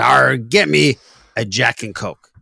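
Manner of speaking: put-on pirate voice. Telling a joke where a pirate orders a drink from the bartender, in a pirate voice. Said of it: "He's got to be a pirate".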